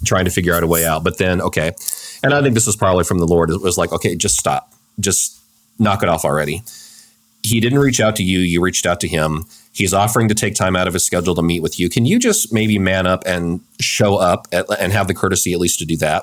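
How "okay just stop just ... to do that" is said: ordinary talk, nothing marked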